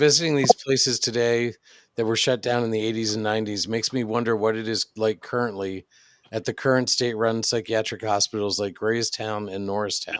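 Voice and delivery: ordinary talk, nothing marked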